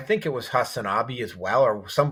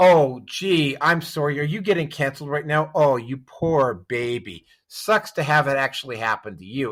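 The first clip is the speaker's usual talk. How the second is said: sneering, jeering, gloating sarcastic tone; 2 semitones higher than usual. Imitating people on the right mocking those getting canceled: imitating mocking gloating. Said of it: "this ha, ha, ha".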